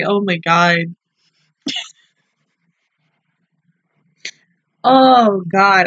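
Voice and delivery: slow, weepy, uncontrollable tearful crying. Reacting to an emotional episode and unable to stop, crying. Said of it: "I can't stop".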